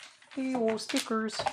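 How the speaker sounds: thin little frog puppet voice, very high. Putting stickers on something, the speaker slips into a Kermit the Frog voice. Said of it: "I slipped into Kermit the Frog there".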